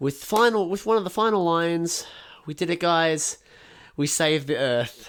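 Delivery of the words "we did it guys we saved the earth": ordinary talk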